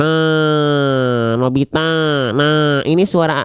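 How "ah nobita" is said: nasal voice, all through the nose, drawn-out ah. Teaching the letter ain, the speaker demonstrates a nasal Suneo voice. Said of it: "sengau suaranya, kayak suara si Suneo".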